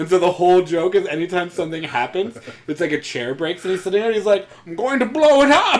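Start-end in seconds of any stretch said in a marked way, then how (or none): 4.7-5.8 very high-pitched, deliberately bad masked villain voice. Explaining a running joke about Bane, doing a really bad Tom Hardy Bane. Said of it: "a guy doing a really bad Tom Hardy Bane".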